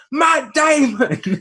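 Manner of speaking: very high-pitched, loud shout. Retelling how someone at the back of the line shouted out, retelling a shout. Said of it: "someone shouts out".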